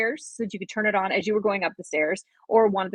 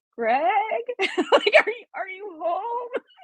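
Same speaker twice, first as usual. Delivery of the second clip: put-on trembling, very high-pitched, quavery voice; 13 semitones higher than usual. Retelling calling out to her husband from the top of the stairs, retelling her own quavery voice. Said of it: "So my voice in this quavery".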